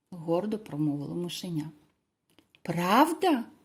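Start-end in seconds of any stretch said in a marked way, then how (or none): 2.6-3.4 astonished, surprised outcry full of disbelief. The little animals answer the mouse, exclaiming in surprise. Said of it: "здивовано вигукнули звірята".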